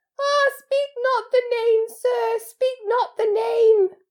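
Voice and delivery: high, loud, pleading moan. Dobby, hands over his ears, begs Harry, moaning. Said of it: "clapped his hands over his bat-like ears and moaned".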